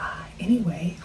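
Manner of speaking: soft, unvoiced whisper.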